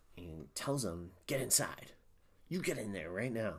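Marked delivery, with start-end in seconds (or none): 1.3-3.5 put-on Southern accent, quieter. Retelling a scene where Kurtz orders someone inside at gunpoint: imitating Kurtz's Southern accent. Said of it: "I don't know why he said it like that".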